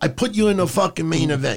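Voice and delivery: put-on Italian gangster voice. Picturing Vince as a gangster ordering Ricochet around: Vince as Italian gangster. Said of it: "like an Italian gangster".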